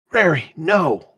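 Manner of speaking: sudden, high, blurted cry. Describing her murmuring in Elven, then acting out her, retelling a sudden blurt. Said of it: "she blurts out".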